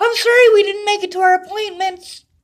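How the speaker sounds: put-on furious shout, very high and very loud. A husband, upset over missed appointments, arguing with his wife, angry yelling. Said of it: "I don't like getting yelled at".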